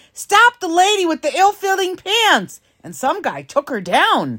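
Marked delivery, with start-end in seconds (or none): 0.2-2.6 play-acted, very high, urgent screamed call. Telling how they screamed for someone to stop a woman, retelling own scream. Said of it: "So I screamed".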